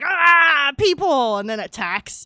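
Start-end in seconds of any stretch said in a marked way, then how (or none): 0.0-1.4 high, loud, shrieking monster scream. Describing an imagined scene, voicing the creature that turns and attacks: monster screaming. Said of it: "screaming like".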